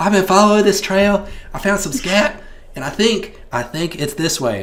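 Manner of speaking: very high-pitched, loud woman's voice. Voicing an animal rescuer livestreaming from the woods: Jeannie's voice. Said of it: "find this woman's voice".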